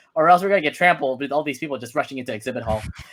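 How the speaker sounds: usual speaking voice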